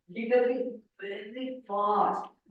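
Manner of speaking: very slow, careful, drawn-out speech. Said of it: "am I speaking very fast?".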